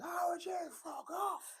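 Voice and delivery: very high, slow, drawn-out angry lumberjack voice. Talking about axe throwing coming from Canada, mock-angry lumberjack voice. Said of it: "some angry lumberjack program saying".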